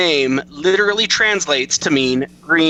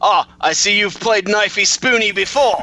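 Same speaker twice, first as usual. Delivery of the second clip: slow, drawled, spot-on, put-on Australian accent; 4 semitones higher than usual. Retelling a Simpsons scene, voicing an Australian: Australian accent impression. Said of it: "spot-on Australian, uh, impressions".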